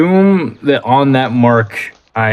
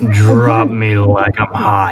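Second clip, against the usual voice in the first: whispering in a character voice. Voicing a character whispering to another while flying: whispering in character. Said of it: "Jerry is just going to whisper".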